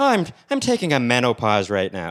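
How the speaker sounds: put-on Irish accent, Irishman voice. Joking with co-hosts about an Irishman taking a pause, doing an Irish accent impression. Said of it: "impression of a an Irishman".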